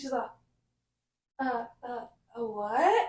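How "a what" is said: put-on flustered, smitten, googly-eyed voice. Retelling the waitress mishearing the order: imitating a flustered googly-eyed waitress. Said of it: "this waitress was all, all googly eyed".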